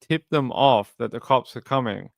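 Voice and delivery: plain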